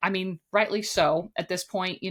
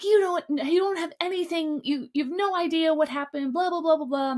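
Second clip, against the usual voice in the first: bitter, heated yelling, high-pitched; 10 semitones higher than usual. Recounting a shouting match at a party, retelling Jesse yelling back. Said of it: "And Jesse's yelling back".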